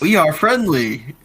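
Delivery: high, called-out shout. Playing a character who shouts to strangers through a crack: shouting in character. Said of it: "I'm gonna shout it out".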